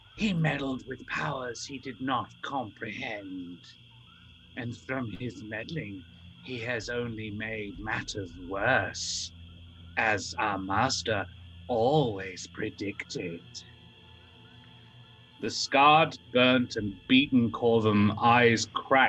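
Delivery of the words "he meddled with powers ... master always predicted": half-whispered creature voice. Narrator voicing the second creature half-whispering into your ear, creature half-whispering. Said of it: "The second creature whispers into your ear".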